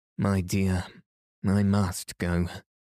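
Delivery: plain reading voice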